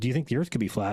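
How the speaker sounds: ordinary delivery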